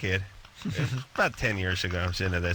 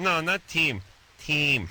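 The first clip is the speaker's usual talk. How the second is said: put-on thick, slow Russian accent; 6 semitones higher than usual. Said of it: "this kid had a thick Russian accent".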